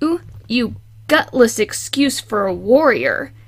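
hissing, hissed words. A narrator reads a character taunting his leader, hissing. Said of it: "he hissed".

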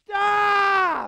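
put-on yelling. Retelling how a man shaking during a quiet service interrupted: imitating someone yelling. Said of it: "yelled out at the top of his li-".

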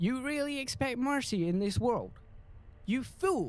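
botched put-on English accent. Retaking a character's line after flubbing it, failed english accent. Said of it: "why can't I do an English accent on that specific line".

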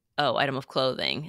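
ordinary talk, nothing marked

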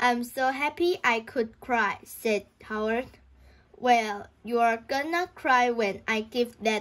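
ordinary delivery

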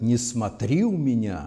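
ordinary delivery, nothing marked

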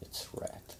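soft, secretive, voiceless whisper.

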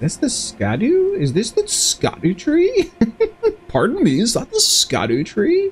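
high, polite voice.

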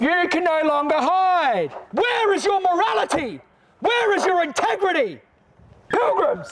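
furious, angry, accusing outcry. Protester addressing pilgrims at a filmed protest, angry. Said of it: "Do I sound angry?".

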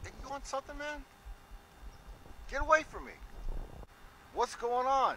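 upset, agitated tone. Telling the other man to get away; upset. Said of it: "I understand that you're upset".

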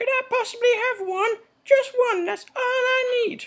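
very high comic puppet character voice.

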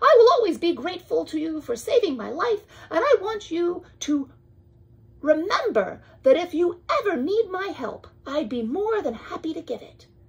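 small, squeaky mouse voice. Amos the mouse says goodbye to Boris, who saved his life: small squeaky voice. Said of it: "[name], a mouse, ... the small voice, ... squeaked [name]".

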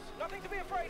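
high, scared, frightened voice.

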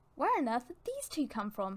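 ordinary talk

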